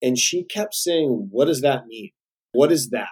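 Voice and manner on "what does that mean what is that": put-on blunt voice with New York accent. Speaker recalling a first meeting with Barbara Corcoran, imitating her blunt New York way. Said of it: "she says it in such a blunt New York way".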